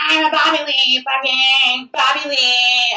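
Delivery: mock slow, high, drawn-out, stretched-out yelling. Retelling how the speaker screamed at everyone: imitating own screaming. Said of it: "I just started screaming at everyone".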